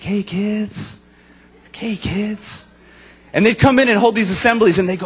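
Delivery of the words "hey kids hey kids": mock saccharine, very slow, sugary sweet kid-talk voice. Imitating school assembly visitors greeting the kids, imitating a sugary sweet voice. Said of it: "they just talk in this voice like".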